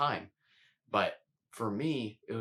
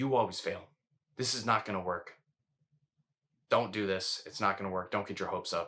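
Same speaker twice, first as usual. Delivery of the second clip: mock strict, stern, critical, discouraging scolding voice; 2 semitones lower than usual. Describing the voice of a different woman telling her she fails: imitating a strict critical voice. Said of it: "You hear that tone of voice?".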